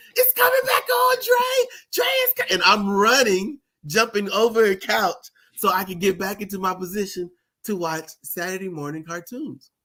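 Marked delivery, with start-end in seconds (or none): 0.1-2.5 mock, very high-pitched screaming. Retelling a brother calling that cartoons are back: imitating brother screaming.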